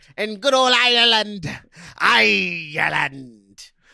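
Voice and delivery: slow, fake pirate accent, "Ireland" drawn out. Answering a remark about Ireland in a put-on pirate voice. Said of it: "Are you a pirate?".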